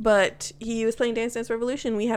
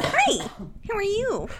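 over-the-top, very high, drawn-out, obnoxious customer-service voice; 10 semitones higher than usual. Acting out being the most obnoxious work person: obnoxious work-person voice. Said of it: "obnoxious work person".

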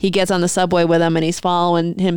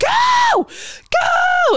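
very high, frantic scream, as if inner. Retelling a woman's panicked inner thoughts, imitating an inner scream. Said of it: "her inner head is screaming".

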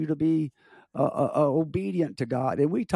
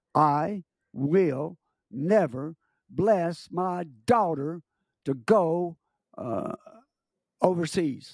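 very harsh, angry, slow voice. Retelling what a daughter's father said when asked for his blessing, harsh angry voice. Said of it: "he said in a very harsh voice".

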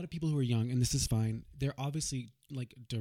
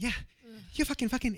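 put-on nice, deliberate comedian delivery, higher; 10 semitones higher than usual. Describing a comedian's stand-up delivery: Pete Holmes impression. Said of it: "a face and a delivery that's very deliberate, where he's like".

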